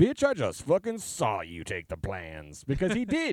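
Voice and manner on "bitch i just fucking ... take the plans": animated, swooping voice with wide pitch swings. Wishing a film scene were recut, imagining the line in a James Earl Jones voice.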